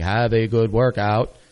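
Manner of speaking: slow, mechanical robot voice. Mimicking the little monitor speaker that greets people at the treadmill area, robot voice. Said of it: "so you get the robot voice going".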